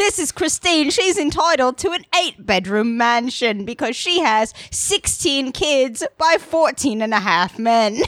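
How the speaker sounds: mock British announcer delivery. Introducing christine to the other speaker, in a british announcer voice. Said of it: "that British announcer voice makes it sound super duper true".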